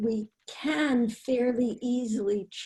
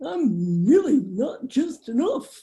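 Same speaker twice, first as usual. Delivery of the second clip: loud silly cartoon voice; 3 semitones higher, 5 dB louder than usual. Changing the chatter in their head to a new line, Goofy voice. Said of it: "one of my favorite characters um, is Goofy... but I change it to".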